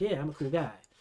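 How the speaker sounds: relaxed, laid-back, unbothered cool-guy voice. Imitating the show's main character: imitating a laid-back vibing character. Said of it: "Just kinda vibing".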